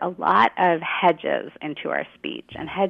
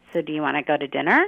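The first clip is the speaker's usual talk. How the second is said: questioning lilt, pitch climbing on "dinner"; 2 semitones lower than usual. Showing english question intonation, rising pitch on dinner. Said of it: "And our pitch goes up at the end".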